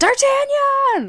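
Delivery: very high, slow, drawn-out excited callout. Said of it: "I was like".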